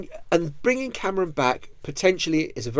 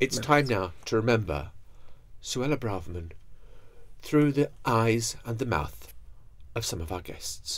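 grave, low, hushed solemn voice broken by pauses; 5 semitones lower, 6 dB quieter than usual. Announcing a remembrance segment with guests, in a solemn voice. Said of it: "we really have to put on the solemn voice now".

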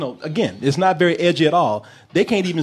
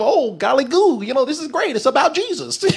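high, wholesome, golly-gosh goody-goody voice; 8 semitones higher than usual. Imagining how Ned Flanders from The Simpsons would enjoy the movie: Ned Flanders voice. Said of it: "Ned Flanders from The Simpsons".

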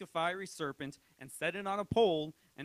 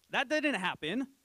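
normal talking voice

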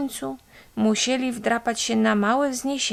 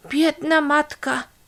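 calling out, much higher; 5 semitones higher than usual. Reading a story, a mother sees a wet cat and kittens floating past, calling out. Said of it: "zawołała mama Muminka".

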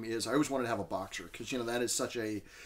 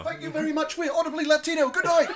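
very loud, very high put-on British accent; 9 dB louder than usual. Playing a band frontman saying goodnight to the crowd: british accent. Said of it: "He says in a".

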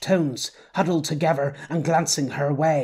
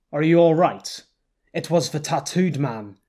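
ordinary delivery

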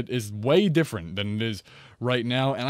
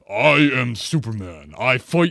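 loud, slow, booming, poorly done heroic voice; 5 dB louder than usual. Explaining that people can pretend to be anyone, doing a bad Superman impression. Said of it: "that was a really bad impression".

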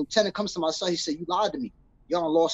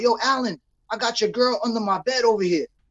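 put-on scream, higher pitch; 5 semitones higher, 3 dB louder than usual. Retelling how a prisoner down the tier taunted another inmate: imitating someone screaming. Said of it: "he screams out".

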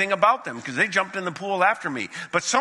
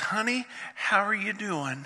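mock-sweet, kind voice, higher and quieter; 2 semitones higher, 6 dB quieter than usual. Retelling what an elderly woman standing too close said, imitating a woman's kindest voice. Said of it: "she says in the kindest voice".

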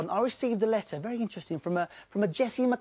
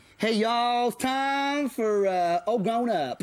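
put-on American accent, very slow and drawn out. Chatting with a guest from New York, he shows off a put-on American accent. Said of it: "I've got a great accent. Check this out".

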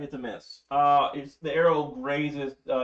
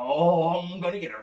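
giggly, gleeful, villainous cackling voice; 3 semitones higher than usual. Voicing a creature climbing up a pipe toward a player: cackling. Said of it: "he's cackling on the way up".

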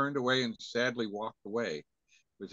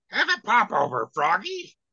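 belted high with swooping pitch; 9 semitones higher, 9 dB louder than usual. The speaker explains where a character voice came from: Sydney the Witch voice. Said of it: "that was Sydney the Witch".

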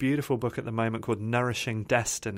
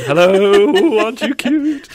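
puppy-talk voice, higher, louder, slower; 10 semitones higher, 15 dB louder than usual. Describing a training she's excited about, slipping into a talking-to-puppies voice. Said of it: "my talking to puppies voice".

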